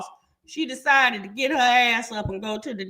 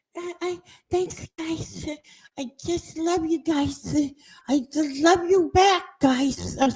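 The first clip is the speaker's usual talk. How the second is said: drawn-out, slow, high little kitty-cat voice; 5 semitones higher than usual. The speaker mimics a woman thanking the group, imitating a slow kitty voice. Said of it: "the slow uh, uh kitty voice".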